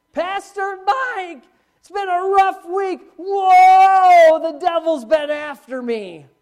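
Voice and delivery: very loud, very slow, high sarcastic complaining. Speaker imitates what people often say to him: sarcastic mocking imitation. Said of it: "This is so sarcastic".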